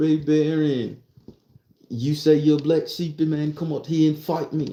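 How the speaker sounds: put-on British English-sounding accent. Retelling a man challenging someone to fight, in a British accent. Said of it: "in his British voice, not American".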